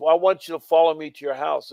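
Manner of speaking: plain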